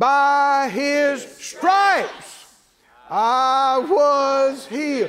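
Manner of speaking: every word given emphasis.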